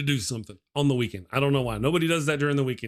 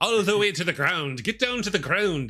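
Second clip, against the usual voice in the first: put-on Irish accent throughout, pitched higher; 5 semitones higher than usual. Retelling a friend off camera cheering on push-ups: imitating an irish accent. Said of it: "doing it with an Irish accent".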